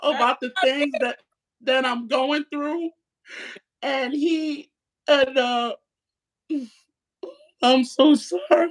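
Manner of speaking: speaking in tears, crying. Someone talking about what they're going through and apologizing, crying. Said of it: "You cry".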